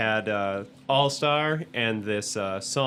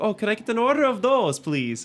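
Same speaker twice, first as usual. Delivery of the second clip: put-on Scottish accent, pitched very high; 11 semitones higher, 4 dB louder than usual. Retelling his order at the Burger King counter, in Shrek's Scottish accent. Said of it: "I tried my best Scottish accent".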